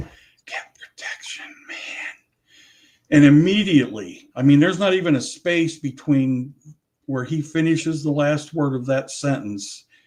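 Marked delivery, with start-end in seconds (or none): 0.0-1.8 put-on whisper, quieter. Retelling words heard on a recording: imitating someone whispering. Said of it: "but he's whispering it".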